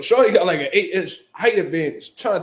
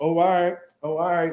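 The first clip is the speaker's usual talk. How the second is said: put-on nervous voice. Retelling how the other girl backed down: imitating a nervous reply. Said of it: "Low-key nervous and shit".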